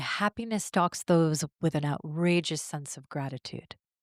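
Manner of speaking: ordinary talk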